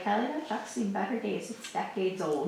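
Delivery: ordinary talk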